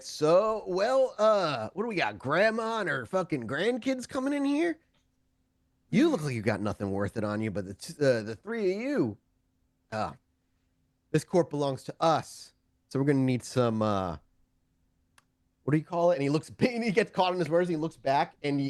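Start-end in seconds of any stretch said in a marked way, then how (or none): 0.0-16.1 fake confidence, cocky blustering swagger. A man walks up to a grandma and her grandkids, with faux confidence. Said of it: "with this faux confidence".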